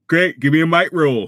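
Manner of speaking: talking through a yawn. Game master asks a player for a might roll, yawning while talking. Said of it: "Sorry, I was yawning".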